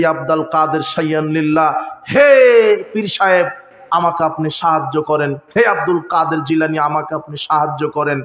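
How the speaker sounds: ordinary talk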